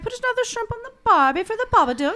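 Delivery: high, fast mock Cockney accent.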